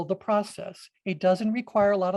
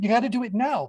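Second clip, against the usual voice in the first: screaming, higher pitch; 3 semitones higher than usual. Describing clashing voices in your head, voicing one that pushes you: screaming inner voice. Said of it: "another voice is screaming at you".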